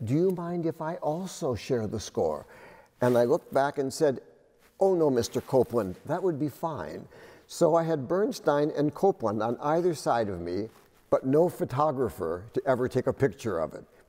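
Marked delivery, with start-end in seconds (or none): 0.0-2.5 very quiet, barely-there, soft, hushed voice. Recalling Copland speaking to them from behind: very quiet Copland voice. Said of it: "a very quiet voice from behind said".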